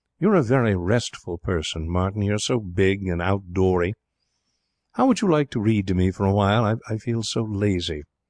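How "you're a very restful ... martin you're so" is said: plain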